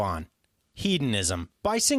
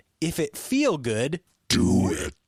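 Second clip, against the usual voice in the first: deep, very low demonic voice; 4 semitones lower than usual. Asked to record a line in devil voice. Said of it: "can you give me devil voice on do it?".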